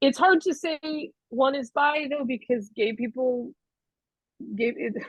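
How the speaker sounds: chuckling through the words. Answering an interviewer's question, laughing at own stand-up joke. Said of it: "I'm laughing at my own stand-up joke".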